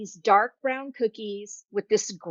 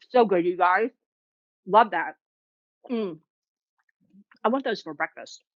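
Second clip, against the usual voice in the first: speaking with full mouth. Host signing off to viewers, talking with mouth full. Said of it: "talking to you guys with my mouth full".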